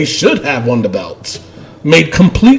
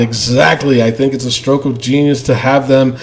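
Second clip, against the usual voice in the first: ordinary talk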